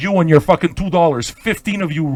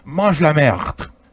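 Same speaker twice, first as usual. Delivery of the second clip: put-on mushy, mumbled French accent; 2 semitones lower than usual. An Italian speaker shows how the French say a phrase, mushy French accent. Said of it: "You always sound like you're chewing on a chunk of shit when you talk".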